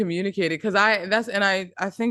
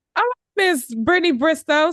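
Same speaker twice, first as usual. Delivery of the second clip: really loud, high, thrilled shouting; 9 semitones higher, 4 dB louder than usual. Thanking people for cheering them on, yelling excitedly. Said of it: "I'm yelling so loud".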